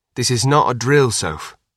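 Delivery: plain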